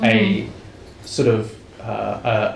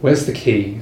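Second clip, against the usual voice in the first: chilling, cold, icy voice. Game master voicing a figure behind the players, in a cold voice. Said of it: "a cold voice comes from behind you".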